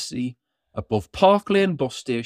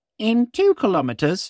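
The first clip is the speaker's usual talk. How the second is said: bossy, high female sat-nav navigation voice; 6 semitones higher than usual. Narrating a Christmas story, reading the Santa sat-nav's line: bossy lady sat-nav voice. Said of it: "said the Santa nav in a bossy lady's voice".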